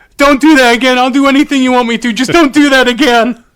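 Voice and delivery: put-on very high, loud, tearful begging whimper. Retelling a video of a tased man in tears, imitating him whimpering. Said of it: "you hear him just whimpering".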